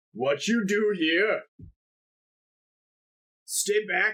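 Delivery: slow, crude giant voice in broken English. Voicing a giant who warns the party off in broken common. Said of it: "she'll be like".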